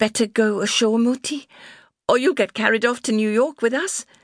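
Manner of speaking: awkward, uneasy delivery, pitched slightly high. On a ship's deck in the rain, a woman speaks to an old woman: said awkwardly. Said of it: "Deborah said awkwardly".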